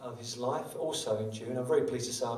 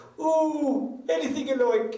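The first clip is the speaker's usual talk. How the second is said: very high, very loud put-on Irish accent; 10 dB louder than usual. Retelling a man's reply to a request, the speaker does an Irish accent. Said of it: "I think that's a pretty good Irish accent".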